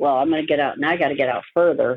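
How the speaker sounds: plain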